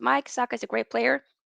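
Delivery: plain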